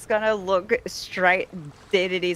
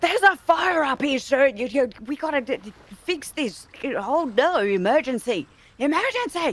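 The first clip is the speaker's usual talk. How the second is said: high, shouted yelling; 7 semitones higher than usual. Playing a character who spots a fire and yells down: character yelling down a warning. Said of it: "then she yells back down".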